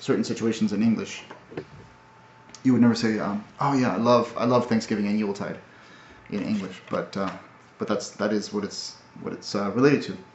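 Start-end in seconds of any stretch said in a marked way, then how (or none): none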